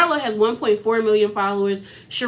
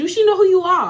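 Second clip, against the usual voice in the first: bad put-on Jamaican accent, pitched up; 9 semitones higher, 4 dB louder than usual. Quoting Mama Sonia, who got angry for her daughter, bad Jamaican accent as Mama Sonia. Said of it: "I can't do a Jamaican accent".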